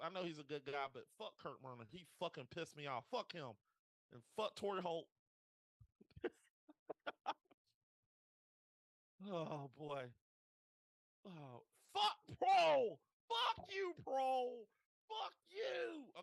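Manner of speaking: loud, swooping, upset, angry cursing rant. Speaker apologizing to listeners while venting about an old game, upset ranting. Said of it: "I'm upset".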